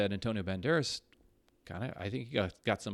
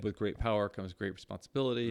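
ordinary talk, nothing marked

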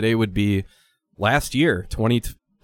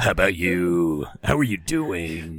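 put-on monster truck announcer voice; 5 semitones lower than usual. Suggesting small talk with a cashier would be easier in a monster truck announcer voice. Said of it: "That's a great".

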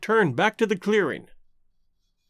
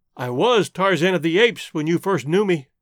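ordinary delivery

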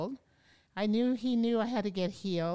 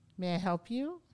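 put-on calm, peaceful voice. Retelling the teacher's first words: imitating a peaceful teacher. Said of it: "very peaceful".

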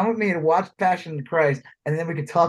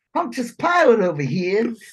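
put-on thick Brooklyn accent, pitched up; 6 semitones higher, 3 dB louder than usual. Describing Harvey Keitel playing Judas in a film, thick Brooklyn accent as Harvey Keitel. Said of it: "he had like a thick Brooklyn accent".

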